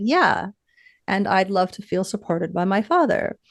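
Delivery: ordinary talk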